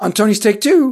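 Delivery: voice cracking. Introducing the segments of this week's show: voice cracking. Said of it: "my voice just cracked like I'm fourteen".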